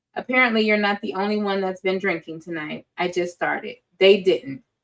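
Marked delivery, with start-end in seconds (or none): none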